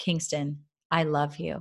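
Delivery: quiet whisper. A mother retells whispering to her son Kingston under a scarf: whispering quietly. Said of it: "I whispered quietly in his ear".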